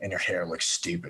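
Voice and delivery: muttering under his breath. Voicing a character walking away, muttering an insult: muttered under his breath. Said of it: "under his breath, Lachlan's just like".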